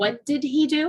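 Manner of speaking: the word "he" leaned on, rest kept light. Showing you need not drop the H to be understood: stress on the word 'he'. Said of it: "And emphasize the he".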